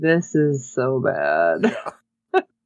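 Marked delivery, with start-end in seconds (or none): 0.0-1.6 low, very slow, drawn-out mutter. Recapping a show scene, acting out Johnny's line, retelling a mumble. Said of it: "Johnny is kind of mumbling like".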